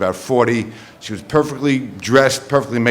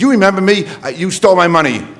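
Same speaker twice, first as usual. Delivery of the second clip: put-on, loud, raised, pitched-up voice; 8 semitones higher, 4 dB louder than usual. Retelling what a woman said to him, imitating her loud voice. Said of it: "in this loud voice".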